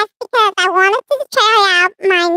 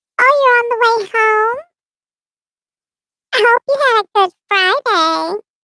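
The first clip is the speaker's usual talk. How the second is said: put-on childlike baby voice. Speaker testing a new mixer greets someone on the way home, baby voice. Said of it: "And this is the baby voice".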